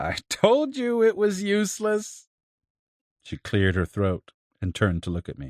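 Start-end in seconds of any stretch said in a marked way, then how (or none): 0.0-2.3 very high, slow, drawn-out cackling voice. Narrator reading Doña Soledad's line as she bars the door, in a cackling voice. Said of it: "said in a cackling voice".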